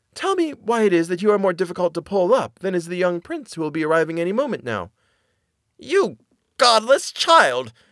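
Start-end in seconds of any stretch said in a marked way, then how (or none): 5.7-7.6 angry outcry, high and swooping. Narrator reads a sorceress turning on a girl, crying out angrily. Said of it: "cried the sorceress".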